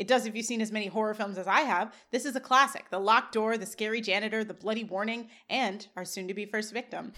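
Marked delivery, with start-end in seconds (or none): none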